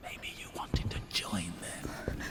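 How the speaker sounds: soft, low, taunting whisper.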